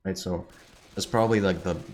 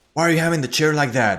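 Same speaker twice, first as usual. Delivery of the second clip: high, loud, angry hollering yell; 9 semitones higher, 7 dB louder than usual. Retelling how a coworker yelled at an employee: imitating someone yelling. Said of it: "it's like he yelled at him".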